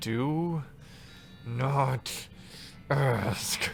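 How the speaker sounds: growling through gritted teeth. Asked what she did to get sent here, she growls through gritted teeth. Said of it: "You can hear her teeth grinding as she growls at you".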